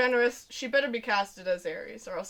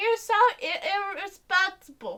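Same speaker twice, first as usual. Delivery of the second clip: put-on high-pitched little-kid voice, scolding tone; 8 semitones higher than usual. Speaker imagines a random nine-year-old telling off an actor: imitating a child telling someone off. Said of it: "some random nine-year-old child telling off".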